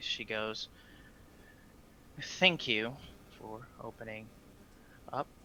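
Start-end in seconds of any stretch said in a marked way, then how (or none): 2.2-5.3 cold, icy, hushed, breathy near-whisper. Narrating a scene, the speaker voices a woman addressing you: cold monotone voice. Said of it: "she speaks to you in a very cold, almost monotone type voice".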